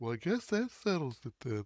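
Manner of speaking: hushed, very soft, quiet murmur. Joking in conversation with wife, quoting an actor's role; soft Charlie Hunnam Ed Gein voice. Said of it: "this really soft, voice".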